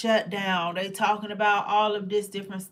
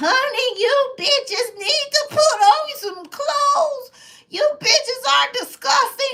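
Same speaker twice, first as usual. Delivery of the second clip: put-on very high, loud old-woman voice; 9 dB louder than usual. Mimicking a grown man's AI voice that sounds like a grandma. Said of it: "It's a grandma voice".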